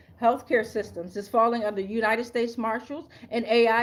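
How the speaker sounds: ordinary delivery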